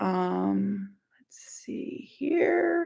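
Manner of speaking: soft, quiet whisper.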